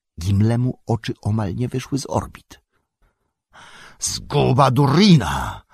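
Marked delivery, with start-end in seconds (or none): 4.0-5.5 loud, swooping, horrified cry of terror. Gimli, seeing the Balrog, drops his axe: shouting. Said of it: "krzyknął i wypuszczając z garści topór".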